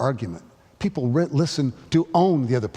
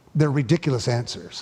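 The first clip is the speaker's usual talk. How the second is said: ordinary talk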